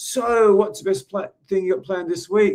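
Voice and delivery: high, bubbly, bright, full-of-energy voice. Retelling his question to a stranger: retelling with tons of energy. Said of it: "So tons of energy".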